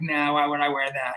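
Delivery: acted arrogant, nasty, snide tone. Retelling how the photo subject refused to wear the jacket: imitating an arrogant, nasty reply. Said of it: "arrogant and nasty".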